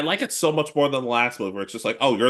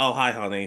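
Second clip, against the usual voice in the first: put-on unhappy, unenthusiastic tone. Retelling a movie scene where a mom greets her son: imitating an unhappy greeting. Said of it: "she did not sound happy to see Ash".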